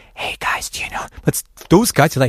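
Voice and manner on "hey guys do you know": very quiet, hushed whisper. Retelling how friends whisper to each other: imitating a whisper. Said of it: "When we whisper".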